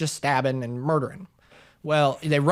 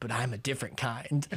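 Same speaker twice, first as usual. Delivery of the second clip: soft, menacing killer voice; 3 semitones lower, 9 dB quieter than usual. Retelling a movie scene where the killer calls a woman, Ghostface voice. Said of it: "he comes in the fucking Ghostface voice".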